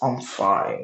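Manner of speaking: darker put-on voice. Retelling a story where Issei answers Reese; Issei's much darker tone. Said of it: "he like speaks speaks in a much darker tone".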